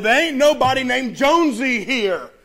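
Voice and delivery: acted groggy, sleepy voice, said loud. Retelling a late-night phone call, the man who answered replies: imitating a loud sleepy voice. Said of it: "Sleepy voice said loudly".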